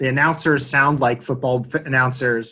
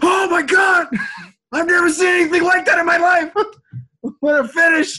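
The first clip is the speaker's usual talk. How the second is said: mock very high, loud, shrill, screaming commentator voice; 5 dB louder than usual. Imitating hyped broadcast commentators who are just screaming: imitating people screaming. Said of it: "it's just people screaming".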